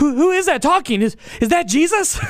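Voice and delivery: put-on, pressing, urgent, high-pitched call-out. Speaker acting out a man who can't see who is speaking, retelling an urgent question. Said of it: "with an urgency in his voice".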